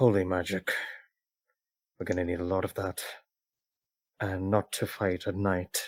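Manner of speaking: quiet, stoic murmur under the breath. Voicing Red speaking up from behind, deep in thought: under her breath. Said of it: "very under her breath still".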